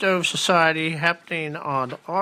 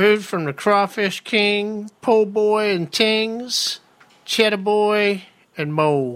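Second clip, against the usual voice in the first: put-on Cajun accent, pitched up; 4 semitones higher, 4 dB louder than usual. Announcing a free event in downtown Kent with a co-host, speak in a Cajun accent. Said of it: "Don't do accents".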